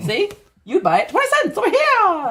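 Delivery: squeaky, high-pitched cartoon mouse voice. Playing a twenties newspaper seller calling out sales: Mickey Mouse voice. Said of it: "Why did your voice turn into Mickey Mouse?".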